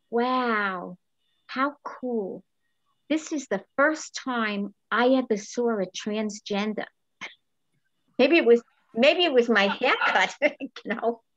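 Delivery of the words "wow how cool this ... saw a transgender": deep, low, slow voice, long drawn-out wow. Retelling a remark heard out of complete silence, imitating a low voice. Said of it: "I hear this low voice say".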